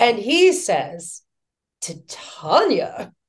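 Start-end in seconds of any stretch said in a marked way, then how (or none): 1.8-3.1 showy, flamboyant delivery with a big flourish. Retelling meeting Robin Williams, who greeted with flourish: imitating Robin Williams with flourish. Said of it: "with all of this flourish".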